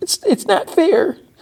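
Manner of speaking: very high, tearful, crying voice. Retelling a show scene where a kid pleads: imitating someone crying. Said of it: "And she's, like, crying".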